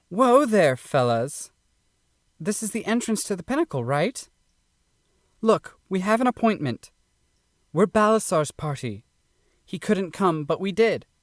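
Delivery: cocky, proud, cheeky, breezy confidence. Pearl addresses the gate guards barring her party's way: Pearl, proud and cocky. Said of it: "[name] pridefully steps toward the gate, her hips swaying naturally with each step. Rightfully arrogant of her attractive appearance, / With jubilant, jaunting strides, [name] pridefully steps toward".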